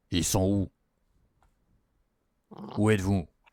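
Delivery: heavy, big, deep, booming, very loud voice. Telling a story, the speaker voices the boss on the radio asking where they are, in a big deep voice. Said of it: "Et vous entendez une grosse voix".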